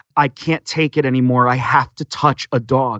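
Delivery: acted-out sobbing. Retelling a woman's words at a dog expo, imitating someone sobbing. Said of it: "she was just sobbing".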